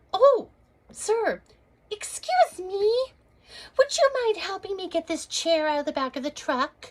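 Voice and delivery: very high-pitched voice. Retelling asking a passing stranger for help, in a put-on high-pitched voice. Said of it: "our voices go up five octaves".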